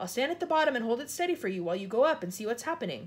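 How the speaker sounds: ordinary delivery, nothing marked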